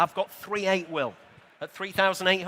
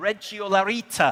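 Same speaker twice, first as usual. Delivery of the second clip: put-on northeastern Italian accent. Announcing a lot's model name as the auctioneer: best northeastern Italian accent. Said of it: "in my best northeastern Italian accent".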